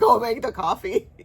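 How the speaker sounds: loud, very aggressive delivery. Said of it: "I was really aggressive".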